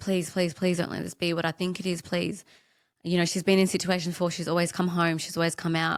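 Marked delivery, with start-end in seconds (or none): 0.0-2.4 put-on desperate, repeated pleading. Retelling praying while driving behind the ambulance: retelling a desperate prayer. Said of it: "I was praying to something like".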